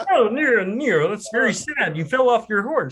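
pitched-way-up, very high puppet frog voice. After talk of loving Kermit's voice, speak to Nero in a Kermit the Frog impression. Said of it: "he's got skills as an impressionist as well".

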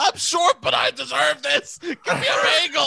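acted raw all-out scream, high and rough rant. Retelling a viral video of a man yelling, mock screaming. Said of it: "He's just screaming".

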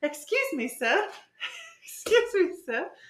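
very high, sing-song, swooping put-on British accent, drawled. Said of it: "in a British accent".

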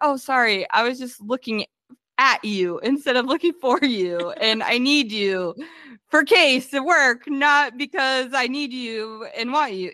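panicked stumbling over words. Retelling a character's flustered attempt to talk to her: imitating flustered fumbling speech. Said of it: "fumbling her words".

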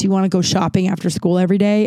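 ordinary talk

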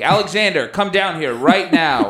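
angry, pissed-off fatherly calling out. Retelling a parent calling downstairs: imitating an angry dad. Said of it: "my dad sounds pissed off".

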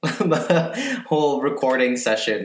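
words spoken while laughing.

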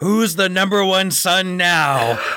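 put-on shrill, very high, drawn-out shout. Retelling bursting in on the family: imitating his own past yell. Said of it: "and I yell".

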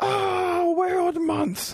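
shrill, high, all-out scream at top of lungs. Speaker recounting failing to pull weeds in the yard, retelling a scream. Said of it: "I screamed out at the top of my lungs".

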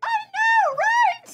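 very high, shrill little pixie chirp. Voicing a pixie who agrees with a character: pixie voice. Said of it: "this pixie who goes".

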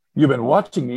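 put-on accusing tone. Speaker retells her reply to a man with a french accent, retelling an accusation. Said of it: "sort of accusatorily".

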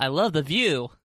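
loud shouted yell in a character voice. Climbing up into an echoing chamber: yelling out. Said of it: "I climb up and I yell out".

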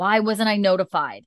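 mock outraged, indignant, pissed-off delivery. Retelling a hospital story, quoting the doctor's reply to the nurse, mock-indignant anger. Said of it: "she's like so pissed and like indignant".

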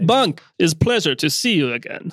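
put-on Russian accent. Voicing a character greeting an old friend: russian accent. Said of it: "He's Russian".

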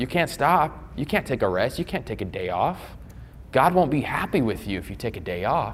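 soft, heavily sarcastic, tongue-in-cheek delivery. Speaker telling the room about overcommitting to service, sarcastic. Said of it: "I'm being sarcastic here".

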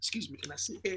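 very soft, hushed, polite voice. Retelling asking to sit in an airport lounge: imitating own lowered polite voice. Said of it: "you know you lower your voice".

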